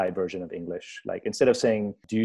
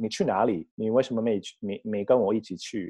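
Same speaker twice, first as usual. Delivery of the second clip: Taiwanese Mandarin accent on na li. Speaker comparing Beijing and Taiwanese Mandarin, demonstrating a Taiwanese Mandarin accent. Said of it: "Taiwanese is like".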